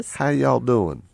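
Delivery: imitated, put-on Southern accent. Co-host answers a remark about Southern accents, mock Southern accent. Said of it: "Even if it is a Southern accent".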